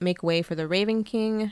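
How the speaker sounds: ordinary talk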